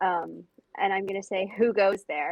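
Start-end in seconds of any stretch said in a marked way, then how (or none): 1.6-2.3 loud, booming, amplified-sounding, echoing call. In a role-play, casting a spell to make the voice louder, booming voice. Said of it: "cast thaumaturgy to make my voice".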